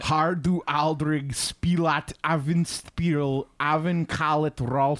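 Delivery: fake, gross put-on Austrian accent. Reading a tongue twister aloud while trying on an accent: put-on Austrian-sounding accent. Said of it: "You're doing you're doing Austrian".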